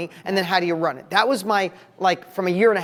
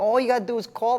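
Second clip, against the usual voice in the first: put-on embarrassingly terrible, thick New York accent; 4 semitones higher than usual. Retelling a line from an old infomercial in the worst new york accent. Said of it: "I had the worst New York accent".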